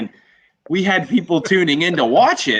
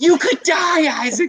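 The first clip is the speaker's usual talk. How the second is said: mock very high, sobbing, screaming shriek; 12 semitones higher than usual. Retelling asking his mom about getting tased for charity, imitating her screaming and crying. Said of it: "She's like screaming and, then, and crying".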